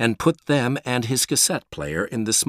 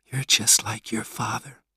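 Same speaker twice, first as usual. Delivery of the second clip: in a whisper. After Peter explains the boys were hurting a cat, his mom replies, whispered. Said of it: "Mom whispered".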